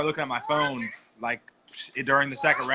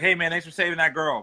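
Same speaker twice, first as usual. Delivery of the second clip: sarcastic, pretend-grateful tone; 4 semitones higher than usual. Telling of meeting the ref after the fight, retelling sarcastic thanks. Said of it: "I was being completely sarcastic".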